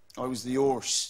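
accent from Devon. Asked to do some of the accent, the speaker says it in a Devon accent. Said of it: "Could you do some of the accent for us?".

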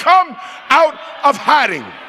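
calling out warmly, friend to friend. Showing the congregation how to tell people like a real friend: shouting. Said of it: "Shout at them".

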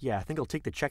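ordinary talk

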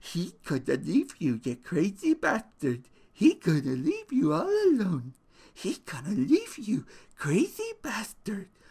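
quiet rabbit voice. Narrator reads the rabbit's words, repeated over and over, rabbit speaking softly.

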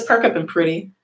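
ordinary delivery

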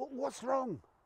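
muttering. Woken by Marie, the narrator settles back and asks, muttering.

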